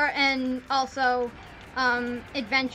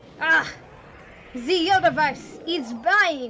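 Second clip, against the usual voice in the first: bad put-on French accent; 2 semitones higher, 3 dB louder than usual. Speaker voicing a line from Kirby, in a bad French-accented Magolor voice. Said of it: "That's how Magalore would say all of those".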